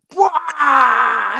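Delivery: high, shouted, roaring cheer.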